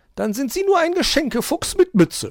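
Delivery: very high, loud, scoffing, mocking jeer. Narrator voicing the magpie taunting the fox; mocking. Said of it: "spottete die Elster".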